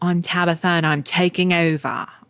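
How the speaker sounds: bad, unconvincing Australian accent. Speaker listing makeover shows quotes one, bad Tabitha Australian accent. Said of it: "That's not a good Australian accent".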